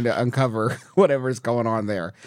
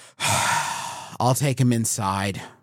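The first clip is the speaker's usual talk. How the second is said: mock noble martyr tone, slow, very drawn out. Parent offers to take the sunscreen-resisting kid inside, in a self-sacrificial tone. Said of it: "in like the most like self-sacrificial tone you can".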